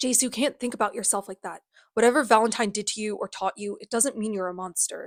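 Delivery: ordinary delivery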